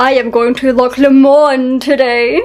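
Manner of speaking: slow, put-on, la-di-da upper-class posh voice. After a quiz answer, speaker jokes about how a place name sounds, posh voice. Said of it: "makes it sound so posh".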